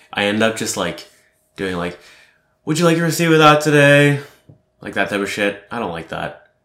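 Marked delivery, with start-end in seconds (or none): 2.7-4.2 unnatural voice, pitched way too high, raised. Describing talking to customers at the till, voice pitched way too high. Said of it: "my vocal tonality going way too high".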